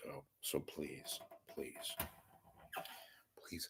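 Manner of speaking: hushed, breathy, barely voiced whisper. Making a repeated plea to listeners, whispering. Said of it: "Why am I whispering right now?".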